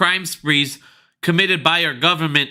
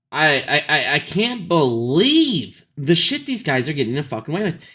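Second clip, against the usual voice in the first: frazzled, stressed-out rant, stammering and tripping on "I". Mid-rant to his audience about people getting away with things, stressed out. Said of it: "I'm getting stressed the fuck out".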